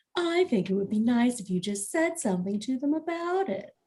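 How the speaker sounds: low, hushed, conspiratorial just-between-us tone. Reading a story aloud, a character beckons another in, speaking in a lowered conspiratorial tone. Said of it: "lowers her voice to a conspiratorial tone".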